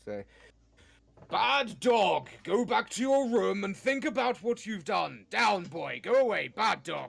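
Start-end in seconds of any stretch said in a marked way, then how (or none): 1.3-7.1 thunderous, booming, slow, loud commanding voice. Using a spell to scold a farm dog: booming magical voice. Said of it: "You could probably try and make your voice boom".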